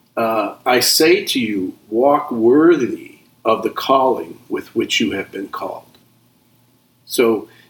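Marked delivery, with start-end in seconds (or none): none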